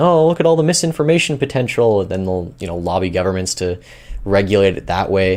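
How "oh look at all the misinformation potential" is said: high, mock alarmed scream. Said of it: "are gonna be screaming".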